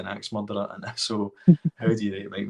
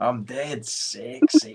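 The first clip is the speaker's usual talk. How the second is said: comic put-on Scottish accent; 4 semitones higher than usual. Showing off an accent he keeps doing, the speaker does a Fat Bastard impression. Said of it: "Fat Bastard obviously is Scottish".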